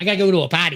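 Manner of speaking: Jersey-accented voice. Asked by a co-host to show their jersey voice, speaker demonstrates: new jersey accent. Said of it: "That's my Jersey voice".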